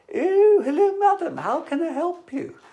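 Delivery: very high, slow, put-on northern posh accent. Recalling Mrs. Slocum's trick of switching voices, doing Mrs. Slocum's northern posh voice. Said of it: "it was specifically northern posh".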